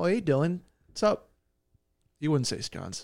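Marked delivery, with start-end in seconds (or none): 0.0-1.3 put-on Canadian accent. Joking about an insult, a friend shows how a Canadian would say it: mock Canadian accent. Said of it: "How would a Canadian say it?".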